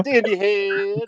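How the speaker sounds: high, put-on Southern Alabama accent. Retelling how a player gave her name: imitating an Alabama accent. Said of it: "in that beautiful Alabama accent".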